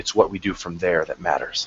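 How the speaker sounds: low, quiet muttering under the breath. A character just out of a vision repeats what he heard: muttering to himself. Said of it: "and he mutters".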